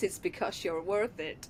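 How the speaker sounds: clumsy, bad put-on American accent, advert-like. Quoting the L'Oreal adverts' line in a bad L'Oreal advert American accent. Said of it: "that's not really good accent at all there, is it? I can't do Yorkshire, a Yorkshire American accent".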